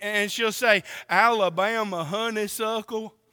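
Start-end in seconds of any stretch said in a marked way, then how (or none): 1.1-3.1 put-on try at a country accent. Retelling how Libby tries a country accent for him, Libby's attempted country accent. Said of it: "She tries to do a country accent for me".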